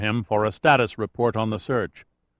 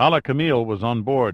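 plain reading voice

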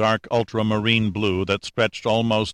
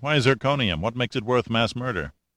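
ordinary delivery

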